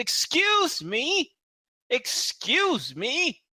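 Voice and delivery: piercing, horrible shrill call, very high, very slow. A woman approaches and calls out to Ellie, who is digging: horrible shrill voice. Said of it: "this horrible shrill voice".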